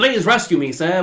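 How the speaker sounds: put-on nineteen-twenties dame voice. Mid-conversation, a speaker slips into a 1920s dame voice. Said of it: "Now I sound like a dame".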